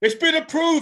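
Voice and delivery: re-enacted shouting. Retelling waking up to an approval email and shouting it out, retelling a shout. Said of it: "I shouted".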